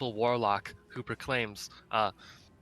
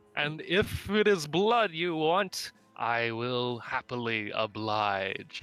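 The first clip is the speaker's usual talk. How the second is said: menacing voice calling from a distance. Speaking to Bartleby and the other elves, voice a distant voice: booming voice. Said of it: "you suddenly hear a booming voice".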